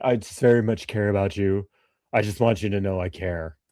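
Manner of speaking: mock falsely sincere, sarcastic put-on caring tone. Mocking a remark about safety with a sarcastic imitation of someone caring. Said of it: "I'm being sarcastic".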